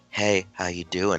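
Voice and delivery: slow, smooth, seductive bedroom voice. Retelling how a friend talks to his cat: imitating a friend's bedroom voice. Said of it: "he gets, like, a bedroom voice".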